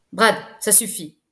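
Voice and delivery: dry, curt, sharp. Telling a student who torments another boy to stop, in a curt, sharp tone. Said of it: "dit Ben d'un ton sec".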